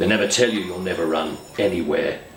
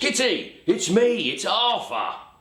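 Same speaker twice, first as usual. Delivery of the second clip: very high-pitched, slow, drawn-out calling shout. Retelling shouting through the letterbox of a woman who won't let you in, re-enacting a shout. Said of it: "I'm shouting through the letterbox".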